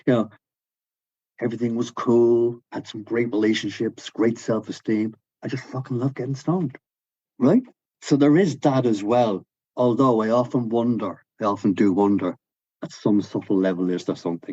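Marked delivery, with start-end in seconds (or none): 0.1-6.8 put-on American accent. Retelling what a guy said about his life, speaker quotes him in a put-on american accent. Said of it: "I'll do it anyway".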